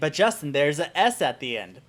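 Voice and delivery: ordinary talk, nothing marked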